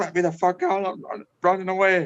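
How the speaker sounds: play-acted frantic, freaked-out, stumbling, high, panicked voice. Retelling a car scare with friends, retelling a panicked plea. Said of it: "I'm having a freak out".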